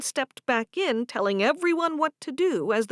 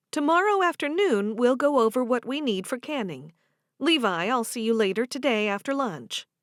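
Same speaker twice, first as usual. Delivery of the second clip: ordinary delivery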